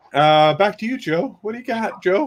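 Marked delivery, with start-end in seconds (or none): 1.4-2.3 high voice cracking mid-word. Handing over to joe with a question, voice cracking. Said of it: "My voice is cracked".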